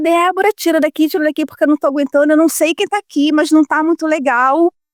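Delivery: put-on tearful pleading through sobs. Retelling begging the therapist to remove the energy, reenacting own crying plea. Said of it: "E eu chorava e falava".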